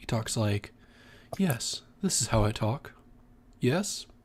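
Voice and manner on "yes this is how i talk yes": monkish manner of speaking. Asked how a character talks, the narrator shows it, soft-spoken, monkish. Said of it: "soft spoken, monkish".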